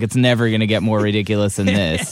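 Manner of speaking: ordinary delivery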